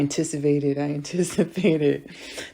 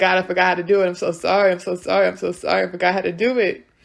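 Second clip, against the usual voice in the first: acted-out sobbing, higher; 4 semitones higher than usual. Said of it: "I'd be crying to God".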